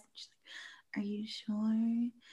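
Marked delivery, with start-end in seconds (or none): 1.0-2.1 very quiet, gentle, hushed, with "sure" drawn out. Retelling a film scene where a girl knocks: imitating a soft-spoken girl. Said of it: "very kind of soft-spoken girl".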